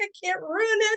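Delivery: tearful, very high sobbing cry. Retelling holding a picture and reacting to it: retelling own crying. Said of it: "I'm crying".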